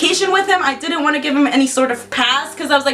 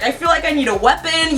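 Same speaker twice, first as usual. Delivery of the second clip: ordinary talk, nothing marked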